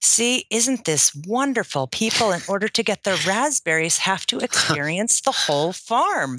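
mock gushing, delighted and enthusiastic. Retelling a farm founder walking visitors out to the raspberries, retelling delighted speech. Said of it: "explaining to us in this delighted voice".

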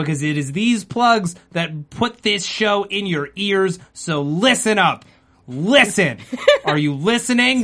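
fierce, pushy, forceful, hectoring delivery. Telling listeners not to skip the plug, shouting. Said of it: "Stop shouting at me".

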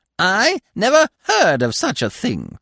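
very high, cracked cackle, swooping wildly in pitch. Reading a story, the narrator voices Jonello the pheasant fleeing in a split, cackling voice. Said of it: "he cried in his split, cackling voice".

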